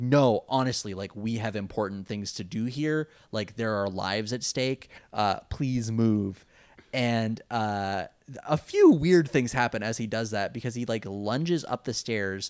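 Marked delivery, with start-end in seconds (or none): none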